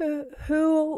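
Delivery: stammering. Faced with a talking stove that has just spoken to her, she is stammering. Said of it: "she stammered".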